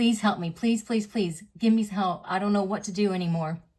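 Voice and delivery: put-on bawling, tearful pleading tone. Retelling pleading with someone for help: retelling a tearful plea. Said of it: "And I started bawling".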